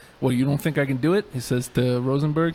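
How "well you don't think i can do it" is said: put-on, intimidating voice. Quoting what Cass says to Rosenberg: imitating Cass, intimidating. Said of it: "just intimidating".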